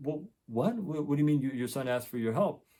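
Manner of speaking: plain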